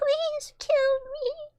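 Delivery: very high, trembling, wavering chipmunk-like quaver. Repeating a line from a chipmunk video, imitating a wavering voice. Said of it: "the wavering in his voice is so good".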